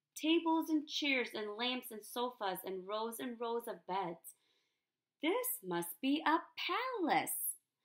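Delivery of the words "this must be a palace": gasping, much higher pitch. Stepping off an escalator onto a floor of sofas and beds, a character gasps. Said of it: "Corduroy gasped".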